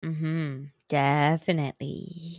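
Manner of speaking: eerie, hushed, spooky storytelling tone. On a podcast, agreeing after the other host plugs their spooky podcast, in a spooky tone. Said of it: "Why'd you say that in a spooky tone?".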